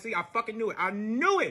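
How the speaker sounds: angry outburst. Retelling own reaction on catching a partner lying: retelling an angry outburst. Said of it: "So now I'm pissed".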